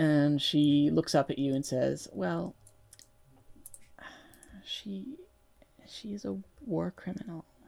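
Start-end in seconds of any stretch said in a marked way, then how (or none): 2.1-7.4 reluctant mumble, much quieter. Voicing a character who stalls and looks up at the listener, in a reluctant mumble. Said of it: "drags her foot across the deck and mumbles".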